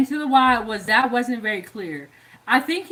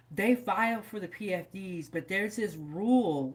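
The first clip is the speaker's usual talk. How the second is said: half-whispered aside; 4 semitones lower, 10 dB quieter than usual. Mid-story, the speaker drops into half-whispering. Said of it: "I don't know why I'm whispering".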